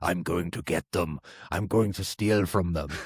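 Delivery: put-on accent mixing Russian and German sounds. Retelling what a player they gamed with kept saying: faux russian german accent. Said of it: "he's got this faux Russian German accent".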